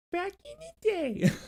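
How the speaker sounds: very high, soft, squeaky goofy voice. Demonstrating the voice once used for the jingles, a silly voice. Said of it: "what I was doing was more like".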